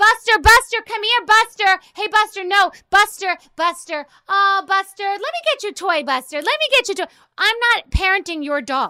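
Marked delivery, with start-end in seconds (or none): 0.0-7.1 loud, high outdoor calling voice. Complaining about people with their dogs, act out an owner calling Buster, imitating someone's outside voice. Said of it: "people want to use their outside voice".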